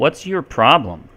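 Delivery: dry, sarcastic jab. Showing an example of a rhetorical question: sarcastic. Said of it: "Like a sarcastic statement".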